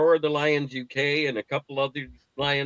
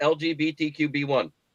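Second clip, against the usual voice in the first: ordinary talk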